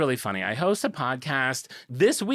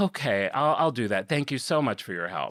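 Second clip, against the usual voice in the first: mock annoyed laugh, lower; 5 semitones lower than usual. Retelling a call with a customer service worker: imitating an annoyed customer-service laugh. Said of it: "annoyed, I hate customer service, like, laugh".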